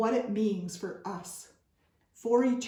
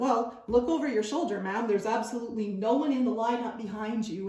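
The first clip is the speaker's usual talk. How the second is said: play-acted, mildly sarcastic, needling tone; 2 semitones higher than usual. Retelling what a woman in a store said back to her, retelling a sarcastic remark. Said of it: "In a bit of a sarcastic voice".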